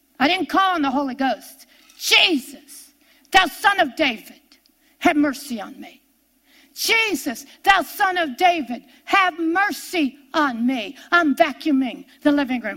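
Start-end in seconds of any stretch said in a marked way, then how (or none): 2.0-11.0 put-on, repeated, hollered pleading for mercy. Retelling own past cries while doing housework: retelling hollering for mercy. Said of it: "I turned into blind Bartimaeus".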